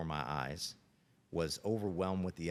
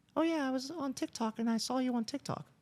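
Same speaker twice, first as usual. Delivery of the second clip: put-on very high, squeaky, slow little boy voice; 3 dB louder than usual. A coach retells his twelve-year-old player's remark, in a high-pitched kid voice. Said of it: "he has a little high-pitched voice".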